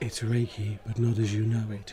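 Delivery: airy, breathy delivery. Explaining the late arrival, repeating the words said on entering the tavern, really breathy voice. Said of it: "in a really breathy voice".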